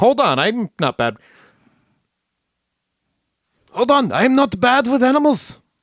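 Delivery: bad, squeaky, unconvincing, high-pitched German accent. Retelling what a man from the newspaper said: bad German accent. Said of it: "That's not a good German accent".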